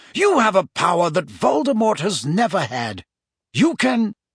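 plain reading voice

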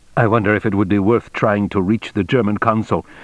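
ordinary delivery

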